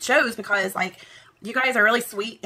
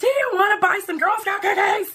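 very high-pitched, loud screaming; 12 semitones higher than usual. Retelling Girl Scouts calling out at a crosswalk: imitating Girl Scouts screaming. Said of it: "they're screaming at me".

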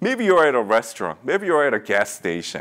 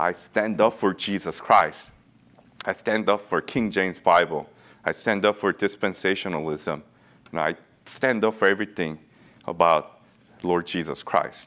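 ordinary talk

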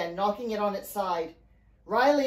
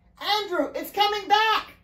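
very high-pitched shouting; 11 semitones higher than usual. A woman calls down from above to a man on a capsizing boat; shouted. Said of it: "Mary shouted from above".

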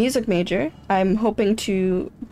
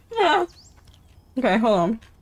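talking with mouth full of food; 3 semitones higher than usual. Right after saying they can't talk with a full mouth, the speaker talks with mouth full. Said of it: "I can't talk while my mouth is full".

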